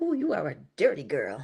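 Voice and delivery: acted-out whisper. Recounting getting out of a dirty car, retelling a whisper to oneself. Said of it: "I whispered to myself".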